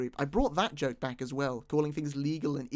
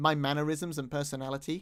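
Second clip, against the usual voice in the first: plain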